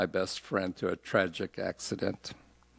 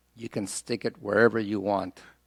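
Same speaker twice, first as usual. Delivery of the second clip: plain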